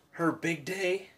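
voice cracking and breaking. Speaker marking Mother's Day with the baby, say it with your voice cracking. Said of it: "My voice just cracked".

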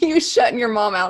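talking through laughter. Reacting to another speaker shutting a door, laughing while talking. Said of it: "I can't stop laughing".

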